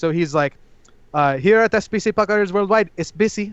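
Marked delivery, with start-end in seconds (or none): 1.4-3.5 put-on thick Filipino accent with a businessman-like pitch. Describing a comedy bit, the speaker quotes a filipino businessman character in a strong accent. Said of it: "he has a strong accent".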